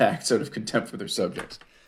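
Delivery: amused, reading aloud through laughter. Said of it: "Sorry, I'm laughing because".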